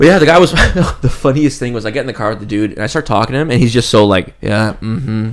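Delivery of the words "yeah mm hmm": put-on flat monotone, quieter. Retelling how the driver answered small talk, imitating his monotone. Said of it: "like so monotone".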